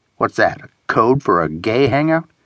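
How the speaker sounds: plain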